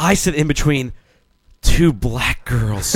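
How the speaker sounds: put-on guilty whisper, hushed and barely voiced. Retelling what a woman said to a room, in a mock-guilty tone. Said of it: "she said it with the most guilty tone".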